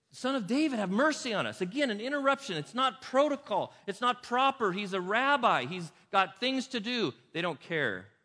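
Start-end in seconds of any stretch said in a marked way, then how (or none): 0.1-1.6 put-on loud, pleading cry at full voice. Telling how people looking to Jesus for a new identity interrupted him, imitating people yelling. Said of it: "Sorry if I'm yelling".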